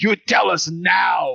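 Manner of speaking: very slow, deliberate, intimidating delivery. Voicing a character threatening a cornered captive: screaming. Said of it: "and I scream at him".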